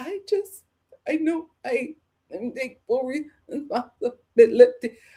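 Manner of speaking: put-on trembling, shaking, quivering voice, talking through tears. Speaker retells a distraught driver taking responsibility, imitating a quivering cry. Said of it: "shaking, quivering voice cry".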